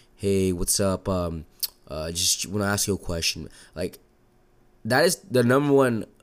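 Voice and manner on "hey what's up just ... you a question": level flat monotone, no inflection at all. Imitating how people tend to sound asking a question: flat monotone. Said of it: "have this monotone voice, just like".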